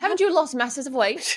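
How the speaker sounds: imitated Irish accent. Hosts practicing a quoted question on the episode: Irish accent. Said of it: "It's like Irish".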